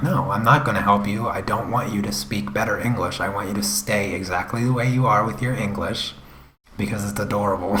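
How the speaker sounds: normal talking voice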